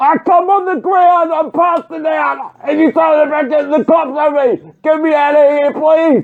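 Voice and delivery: desperate angry shouting. A man on the ground, told the cops will be called, begs to be taken out: desperate angry shouting. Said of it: "Not when you're speaking to us like that".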